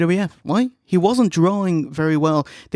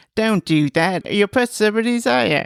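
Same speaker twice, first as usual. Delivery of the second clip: put-on baby voice, higher; 5 semitones higher than usual. Retelling a commentator's line during a match: imitating a baby voice. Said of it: "Bartlett says in a baby voice".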